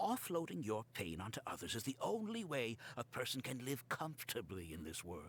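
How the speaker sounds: grave, solemn, low, serious voice. Speaking to another character during an argument: serious voice. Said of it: "Do not say that with a serious voice".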